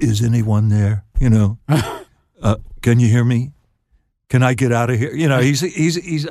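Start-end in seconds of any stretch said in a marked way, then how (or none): 0.0-5.1 put-on poorly done Liverpool accent. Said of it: "I don't do a very good Liverpool accent".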